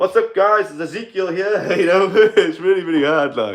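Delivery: high-pitched, stuffed-up, blocked-nose nasal talk. Showing how they'd talk unable to breathe out the nose, nasal voice. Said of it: "I can't breathe out my nose, so I'd have to like do this and talk".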